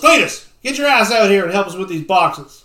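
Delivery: very loud, booming bellow. Retelling a scene, voicing a man who plows into the place: bellowing. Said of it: "and he bellows".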